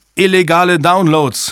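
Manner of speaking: sudden, high, shouted outburst. Reading a technician calling out an answer to the room, shouting. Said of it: "schrie ein Techniker".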